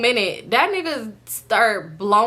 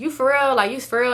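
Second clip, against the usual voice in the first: ordinary talk, nothing marked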